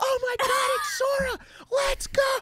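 mock very high, stretched-out, drawn-out screaming shriek. Recalling the class walking outside on break, retelling a scream. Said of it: "just started screaming like".

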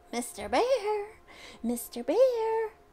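shrill, screechy, screeching cry. Narrator reads a sudden cry that splits the night air, in a screechy voice. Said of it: "a screechy voice split the air".

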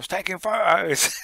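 high, loud shouted call. Retelling people at the site shouting at the group outside, retelling a shout. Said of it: "they were shouting at us, going".

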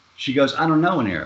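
ordinary delivery

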